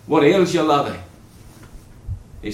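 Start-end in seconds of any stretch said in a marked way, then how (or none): 0.1-0.9 put-on Scottish accent, higher and louder. Retelling a mother speaking to her son, in a Scottish accent. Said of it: "in her Scottish accent".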